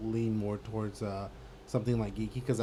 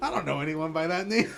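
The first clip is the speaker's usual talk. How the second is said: put-on high, tipsy, sloshed, drunk-sounding delivery; 7 semitones higher, 4 dB louder than usual. Retelling a movie scene where Olaf calls for people: imitating Olaf sounding drunk. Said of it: "he sounds like he's drunk".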